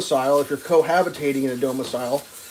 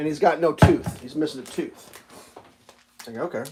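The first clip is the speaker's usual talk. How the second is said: ordinary talk, nothing marked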